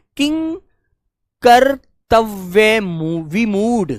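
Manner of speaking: kinkartavya vimudh chopped into chunks, pauses between parts. Hindi lesson, saying a long word slowly with short pauses between parts of the word. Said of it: "इसलिए थोड़ा सा रोक कर बोलेंगे".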